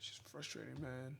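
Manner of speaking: whispered, breathy voice, close to crying. Describing a frustrating losing trade, on the verge of tears. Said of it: "Sound like I'm about to cry".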